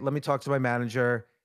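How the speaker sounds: ordinary delivery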